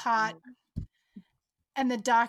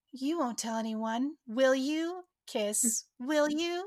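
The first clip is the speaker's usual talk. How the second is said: put-on little baby voice. Retelling a scene, the speaker quotes a woman talking in a little baby voice. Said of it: "she goes into this little baby voice".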